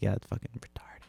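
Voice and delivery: hushed, secretive whisper under the breath. Retelling a remark made so a child couldn't hear: imitating own whisper. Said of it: "whispered it".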